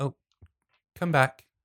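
gentle soft-spoken voice. Game narrator voicing an unseen character calling someone back, in a soft voice. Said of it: "you hear a soft voice say".

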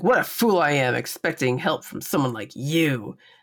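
put-on bitchy tone. Retelling a scene where Lokai gets bitchy, imitating Lokai, bitchy. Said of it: "Lokai gets real bitchy".

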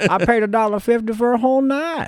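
put-on elderly man voice. Retelling what a man at a whorehouse demanded back: old man voice. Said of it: "when you talk like that, you remind me of the whistling old man".

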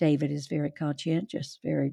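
put-on level, affectless, low flat monotone. Speaker quotes how a woman described a man, in a flat monotone.

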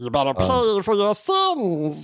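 put-on movie monster voice. Quoting the movie's wife monster: wife monster voice. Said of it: "I love the voice".

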